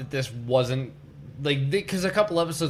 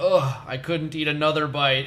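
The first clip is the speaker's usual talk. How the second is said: ordinary talk, nothing marked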